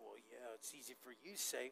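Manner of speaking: very hushed, low, passive-aggressive muttered grumble. Explaining what a grumble is, muttered under the breath. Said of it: "It's this little passive aggressive little thing that's under your voice".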